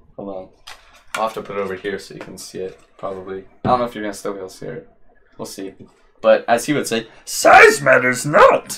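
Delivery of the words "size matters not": bad put-on voice, pushed very high, half failing. Quoting Yoda while holding something up to the camera: Yoda impression. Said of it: "I can't do that accent".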